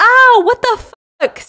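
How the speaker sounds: very high, very loud pained scream. Retelling a show's plot, a character gets hit on the head: imitating someone screaming in pain. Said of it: "So he's screaming".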